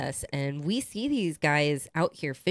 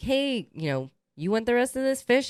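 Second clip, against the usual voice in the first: put-on holler, much higher pitch; 8 semitones higher than usual. Retelling how the cousin called out to a man, retelling a holler. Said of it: "hollered at him like".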